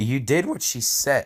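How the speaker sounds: voice cracking. Reading fan fiction aloud, voice cracking. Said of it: "that was a voice crack".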